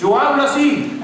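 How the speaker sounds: belted high, loud, indignant voice.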